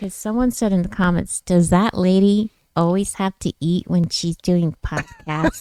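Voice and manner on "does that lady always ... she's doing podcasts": ordinary talk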